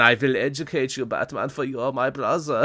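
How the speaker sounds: famous documentary narrator voice. Describing how a show's Joker talks, doing a Werner Herzog voice. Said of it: "he talks like Werner Herzog".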